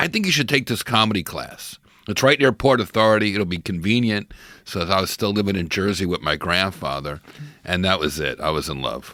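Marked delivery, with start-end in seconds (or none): none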